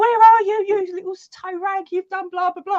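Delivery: shouting voice. Retelling how Mum walked in and shouted: imitating Mum shouting. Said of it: "Mum walks in and shouts".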